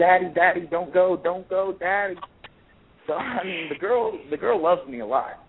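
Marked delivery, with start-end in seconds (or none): 0.0-2.1 mock screaming child voice, higher pitch. Father retelling his daughter begging him not to leave, imitating a child screaming. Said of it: "she's screaming at the top of her lungs".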